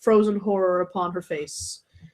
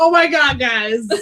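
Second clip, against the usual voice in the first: thrilled, worked-up, excited and eager tone; 4 semitones higher, 3 dB louder than usual. Voicing Max, who picks up on the group's excitement: excited. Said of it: "Max picks up on the excitement".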